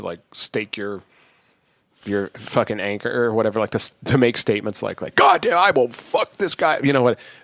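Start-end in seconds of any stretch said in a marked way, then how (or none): 5.1-6.8 mock-angry outburst, much higher and louder. Describing statements people make out of anger, acting out a mock-angry outburst. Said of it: "As much as it feels good to explode".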